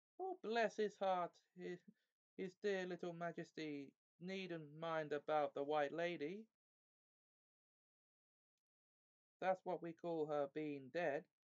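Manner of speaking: shrill, high-pitched whining voice. Reading a story aloud, voicing the hag who pleads: shrill whining voice. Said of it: "the shrill, whining voice".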